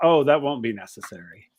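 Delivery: put-on very nice, pleasant young woman's voice. A storyteller voices a stranger approaching the players, very nice young woman's voice. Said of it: "this very nice voice that says".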